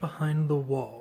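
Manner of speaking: plain reading voice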